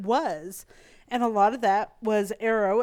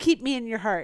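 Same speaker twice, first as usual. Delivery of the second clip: ordinary talk, nothing marked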